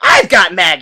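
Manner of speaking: put-on loud, thoroughly irritated, fed-up voice. Recapping a scene where Marge walks up, imitating Marge, annoyed. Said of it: "in a very, like, annoyed voice".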